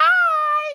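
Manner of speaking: super high, loud bitchy voice.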